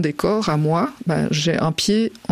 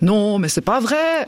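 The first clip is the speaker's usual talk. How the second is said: put-on Vaudois Swiss accent; 4 semitones higher than usual. Retelling a walk in Beijing, the speaker quotes a voice behind them: Vaudois Swiss accent. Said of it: "on entend avec l'accent vaudois".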